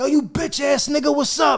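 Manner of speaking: shrill, full-throated yelling at the top of the lungs. Speaker retells yelling at someone across a casino, retelling a top-of-lungs yell. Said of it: "I'm yelling at the top of my lungs".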